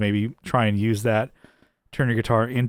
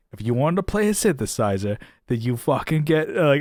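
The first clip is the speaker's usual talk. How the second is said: put-on blunt, ranting New Jersey accent; 3 semitones higher than usual. Praising a commentator's blunt commentary, doing a Matt Quine accent impression. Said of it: "I feel bad doing his his accent".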